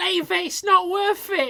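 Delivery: shrill, high, loud, very British accent. Imitating a girlfriend holding back a guy on a night out: very British voice. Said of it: "that is a very British".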